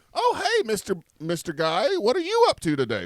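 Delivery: lilting, swooping sing-song tone. Acting out a store cashier greeting a customer at checkout: imitating a cashier's greeting. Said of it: "the lady at the counter says".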